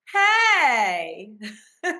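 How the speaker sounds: put-on loud, swooping old-school Valley Girl voice. Leading voice exercises, modelling a line for another to repeat: old-school California Valley Girl voice. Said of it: "old school California Valley Girl".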